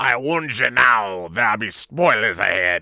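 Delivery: loud, slow, salty sea-dog pirate voice. Speaker addressing the few uninformed listeners, in a salty pirate voice. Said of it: "in your best salty pirate voice".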